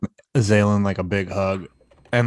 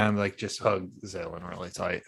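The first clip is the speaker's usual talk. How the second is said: ordinary talk, nothing marked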